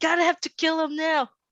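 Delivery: very high, shrill, very loud yell. Warning a companion in character amid gunfire: yelling in character. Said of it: "we're having this exchange at such a high volume".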